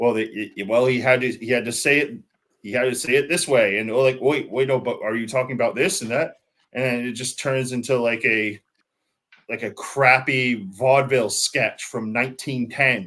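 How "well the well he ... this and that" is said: usual speaking voice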